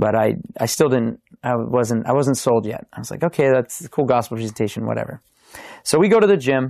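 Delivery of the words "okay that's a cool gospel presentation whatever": plain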